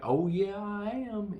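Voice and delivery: put-on weird Southern accent, high, slow, drawn out. Recapping a scene, Bond answers the redneck's taunt: Bond in a weird southern accent. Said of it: "in a weird southern accent".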